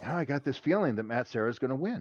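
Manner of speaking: mutter under breath. At a fight with his wife, recalling what he said so others wouldn't hear, muttered under breath. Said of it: "I said under my breath".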